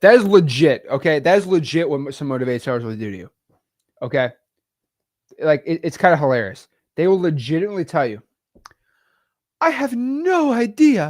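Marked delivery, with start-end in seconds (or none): 9.6-11.1 very high, very slow put-on Victorian accent. Mocking motivated sellers, the speaker quotes them in a fake Victorian accent. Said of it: "in their like fake Victorian accent".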